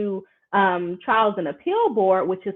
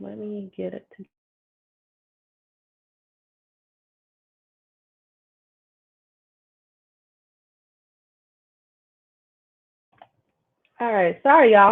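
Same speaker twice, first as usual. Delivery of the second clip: choking and coughing while talking; 4 dB louder than usual. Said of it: "I'm over here choking".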